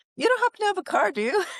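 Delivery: put-on very high, cracking-age pubescent teen voice. Retelling asking on the phone whether a car is available: teen voice going through puberty. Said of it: "I sounded like a teenager going through puberty".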